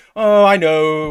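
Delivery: cool, restrained, understated British manner. Imitating a writer reacting to a disliked character: reserved British manner imitating Al Ewing. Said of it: "that reserved Britishness in Al Ewing".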